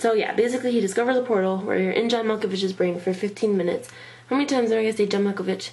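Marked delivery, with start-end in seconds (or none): 4.3-5.7 fast, quicker pace. Summarizing a film plot for a listener, saying it so fast. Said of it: "I say it so fast".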